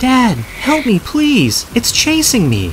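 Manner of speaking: high, loud, desperate screaming.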